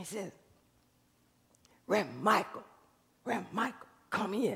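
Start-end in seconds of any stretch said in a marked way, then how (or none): 1.9-4.6 very quiet, rough, raspy whisper. Retelling a drunk-looking man outside church calling out: imitating a raspy whisper. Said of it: "whispering under his voice, really raspy like this".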